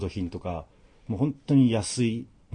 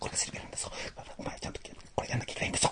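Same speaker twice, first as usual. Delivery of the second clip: mock whisper-shout, much quieter. Recreating an actor's performance from a film, imitating a whisper-shout. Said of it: "ひそひそ声で怒鳴るっていう演技".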